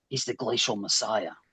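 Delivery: quiet whispered voice. Spreading a story through a crowd in character: whispering. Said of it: "I start whispering it".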